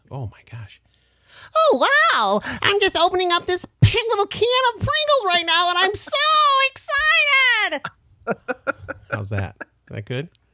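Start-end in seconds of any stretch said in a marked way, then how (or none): 1.5-7.8 very high, loud, hyped-up cartoon giraffe voice. Doing a cartoon voice on request: hyped-up cartoon giraffe voice. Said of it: "here's a giraffe opening a, a can of Pringles".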